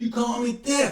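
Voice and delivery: high, loud, upset, crying voice.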